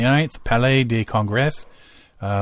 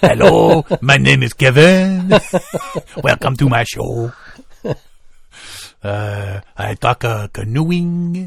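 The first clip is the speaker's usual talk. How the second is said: English spoken in a put-on French accent. Imagining how he would introduce himself: french accent. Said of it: "he'll just say it all in like a French accent".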